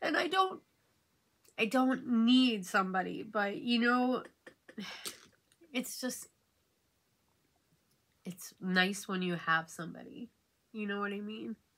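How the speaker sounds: teary and emotional. While getting ready, the speaker unexpectedly tears up, emotional, near tears. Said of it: "I wasn't expecting to get emotional".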